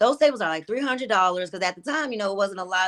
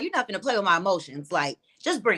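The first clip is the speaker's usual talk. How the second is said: ordinary talk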